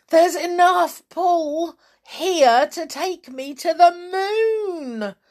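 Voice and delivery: very high cry with "moon" drawn out long. Mrs. Twit, ballooning up, cries out: crying out. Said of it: "Mrs. Twit cried out".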